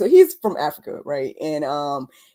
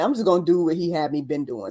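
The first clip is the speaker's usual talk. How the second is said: usual speaking voice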